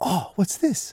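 eager, excited, very high, quick speech. Showing parents an interest cue for a baby: excited interest cue. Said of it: "a quick question in an excited voice".

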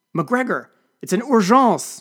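high, loud, slow drawn-out shout. She answers mcgregor's question, shouted. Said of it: "she shouted".

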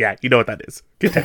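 sassy, no-nonsense, tossed-off delivery. Retelling her line while holding a gun out: imitating Michelle Rodriguez's sassy delivery. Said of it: "somewhat sassy".

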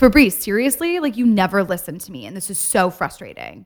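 mock frustrated, swooping, exasperated outburst. Acting out an own past outburst at a partner: imitating own frustrated lashing out. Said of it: "That voice, though, when you go into that mode".

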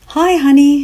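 put-on happy exclamation, weak and congested. A mother in a hospital room answers her child's call, happy exclamation, weak, congested. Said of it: "she exclaimed happily".

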